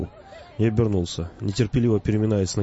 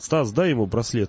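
ordinary delivery

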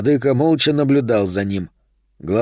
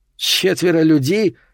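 contemptuous, scornful tone, pitched up; 6 semitones higher than usual. Told by his teacher that four people will test him, he repeats it, contemptuous. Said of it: "с презрением переспросил Вулкан".

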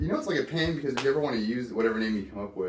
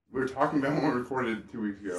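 talking with mouth full. Speaker keeps talking while still eating, talking with mouth full. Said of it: "I'm still eating".

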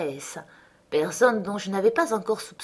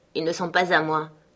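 unwelcoming, unfriendly, uninviting tone; 3 semitones lower than usual. Reading a novel, the hostess answers a visitor, unwelcoming tone. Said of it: "d'un ton encore moins engageant".

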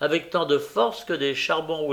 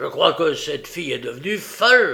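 savage, fierce, wild-sounding voice; 4 dB louder than usual. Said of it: "répondit Sikes d'un air farouche".

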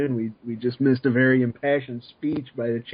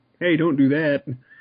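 ordinary delivery

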